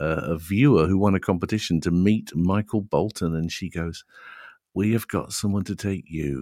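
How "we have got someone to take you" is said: mock Liverpool-accented announcer. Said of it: "I'm doing a great [name] impression here".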